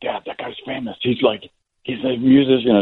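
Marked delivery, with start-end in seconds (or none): 0.0-1.5 quiet, hushed whisper under the breath. Retelling how a daughter told him about a famous guy: imitating a whisper. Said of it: "she's whispering to me".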